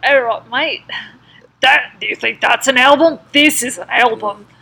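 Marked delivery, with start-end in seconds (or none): 0.0-0.8 put-on Australian accent, higher pitch. Asked by the other host to do the Australian accent, in an Australian accent. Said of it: "do the Australian accent".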